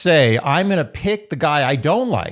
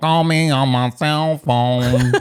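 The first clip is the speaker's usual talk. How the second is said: fake, imitated auto-tune voice; 3 semitones lower than usual. Trying the imitation again, better this time: fake auto-tune voice. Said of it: "I could do better".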